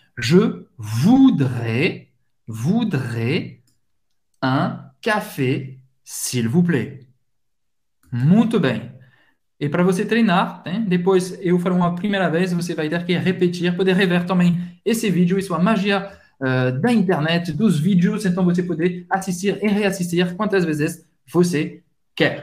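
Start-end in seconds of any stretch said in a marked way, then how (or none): 0.2-7.0 very slow, low delivery. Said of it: "Vamos lá".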